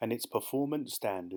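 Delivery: ordinary delivery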